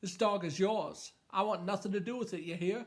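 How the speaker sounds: put-on heavily laid-on Maine accent. Retelling what Joe Camber told Brett in the book: Joe Camber in Maine accent. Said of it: "My best Maine impression".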